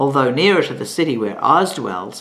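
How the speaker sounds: ordinary delivery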